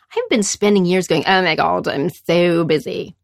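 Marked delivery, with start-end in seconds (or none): 1.2-3.0 slow, lingering, drawn-out put-on British accent. Retelling what they have said for years: British accent. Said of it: "It's always in a British accent".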